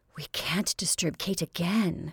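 soft, quiet voice. Narrator reads Constantia's reply to Josephine, said softly. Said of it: "she said softly".

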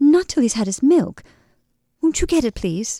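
stammering, fearful tone. Reading a story aloud, a frightened woman pleads with a train attendant, stammering. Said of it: "she stammered".

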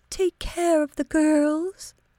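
thin, high voice. Narrating a mother's request to her son, in a high, thin voice. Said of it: "in her high, thin voice".

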